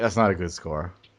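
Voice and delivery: muttering under breath. Retelling another player's remark about a score: imitating someone muttering under breath. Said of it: "under his breath".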